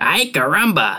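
put-on bad, high-pitched cartoon-kid cry. Quoting a favorite cartoon boy's catchphrase: worst Bart Simpson impression. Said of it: "the world's worst Bart Simpson impression".

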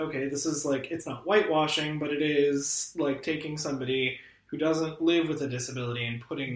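usual speaking voice

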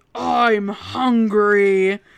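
booming, loud, distorted, warped toy voice. Narrator reads a battery-less Furby speaking from the closet: deep, warped Furby voice. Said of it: "And in a deep, warped voice, it finished with".

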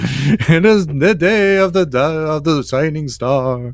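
very slow, dramatic North Korean state newscaster style. Explaining a myth, speaker sounds like a newscaster: North Korean newscaster impression. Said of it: "I'm starting to sound like the newscaster from North Korea".

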